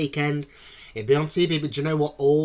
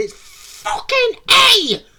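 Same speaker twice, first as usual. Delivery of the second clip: very high, very loud, shrill, swooping scream; 10 dB louder than usual. Retelling watching a quiz show at home: imitating screaming at the tv. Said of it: "screaming at the telly going".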